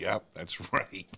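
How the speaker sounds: put-on delivery, laughing hard through the words. Retelling own reply to the bosses: laughing through the words. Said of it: "And I'd be dying laughing".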